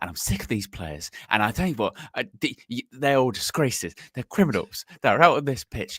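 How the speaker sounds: fast, low, seething, raging half-whisper. Doing Chopper raging in the tunnel, imitating Chopper's raging low half-whisper. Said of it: "like a low whisper".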